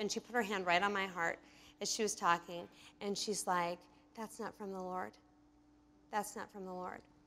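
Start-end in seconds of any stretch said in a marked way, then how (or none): 4.2-7.0 whispered, hushed, close, very quiet and breathy. Retelling what a woman whispered into her ear: imitating a whisper. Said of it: "whispering all this to me".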